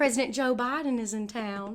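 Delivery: put-on police officer accent. Retelling what a cop said when asked about the police: imitating a cop's accent. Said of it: "I can't stop talking like this because I love this accent".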